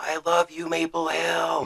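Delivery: long, high, open-throated, drawn-out yell. Retelling a lucky shot sneaking through: imitating Paige yelling. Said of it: "you just hear her yell".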